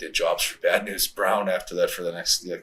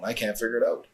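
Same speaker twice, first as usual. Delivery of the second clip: put-on, pitched-up speech said through a laugh; 5 semitones higher than usual. Retelling a phone call with Vince: imitating Vince laughing. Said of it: "Remember Vince laughing".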